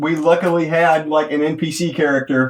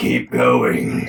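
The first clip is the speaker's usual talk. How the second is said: very low, deep, sinister, demonic devil voice. Speaker describes an imagined voice in the corner: Mark Hamill devil voice. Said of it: "like a Mark Hamill devil voice in the corner".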